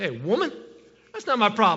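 dismissive, sassy, swooping voice with attitude. Showing how a written line could sound when read, with attitude. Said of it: "you could almost say it with an attitude".

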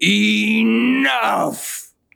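very high-pitched, rough evil villain yell. Playing Shadow Nemesis, yelling before kicking the door: villainous yell. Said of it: "yell in a villainous voice".

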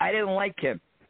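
put-on half French, half Algerian accent. Retelling an impromptu interview, Mad Dog answers why he attacked the ring announcer. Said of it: "in that half French, half Algerian accent".

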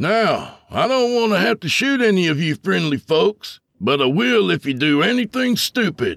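loud, stern tone pitched very high. Reading a robber threatening shoppers at gunpoint: loud, stern voice. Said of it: "He spoke in a loud, stern voice".

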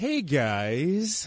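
casual tone, "guys" drawn out long. Greeting the listeners again, imitating Emily. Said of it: "I'm gonna say it like Emily".

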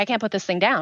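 ordinary talk

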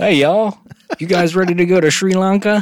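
very high-pitched Southern American accent. Imagining southern Indians talking like southern Americans, in a Southern American accent. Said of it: "If southern Indians sounded like southern Americans".

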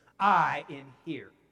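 loud, firm, unwavering tone. Retelling a woman addressing the entire packed courtroom, loud, firm declaration. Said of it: "in a loud, firm voice".

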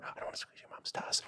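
hushed whisper. Told they can only whisper, speaker repeats the earlier line in a whisper. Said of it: "can only whisper".

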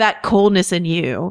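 mock cold delivery. Quoting a character's line from a scene; mock-cold delivery. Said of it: "she says coldly".

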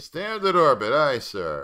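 put-on, very slow, very loud, drawn-out sarcasm. Retelling how the helmswoman answers the captain's order: imitating a hint of sarcasm. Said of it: "she does it with kind of a, a hint of sarcasm".

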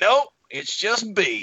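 very high, slow voice, done badly. Retelling how an older doctor answered guesses about his middle name: terrible impression of Doctor John B. Isbell. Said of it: "That was a terrible impression of Doctor John B".

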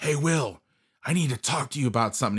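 really pissed off, angry, stern loud call. Retelling a coach calling out to Will after practice, mock-angry Aaron Pelch. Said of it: "He sounded like really pissed".

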